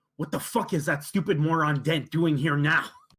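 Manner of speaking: angry stage half-whisper. Voicing Rasmussen to Rutherford on the way to the tavern: angry half-whisper. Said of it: "sort of whisper angrily at".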